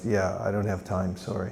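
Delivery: muttered under breath. Retelling what a man says as the passerby moves on, muttered under his breath. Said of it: "utters under his breath".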